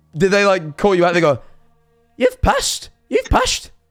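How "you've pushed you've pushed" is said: put-on Scottish mum voice and accent. Listener imagines how the mother reacted to the speaker, Scottish mum impression. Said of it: "That's my impression of their mum, assuming they're also Scottish".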